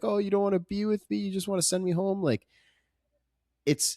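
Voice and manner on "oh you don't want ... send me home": high, tearful voice with sobbing. Retelling a movie scene where a character starts crying: imitating someone crying. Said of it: "And then she starts crying, like".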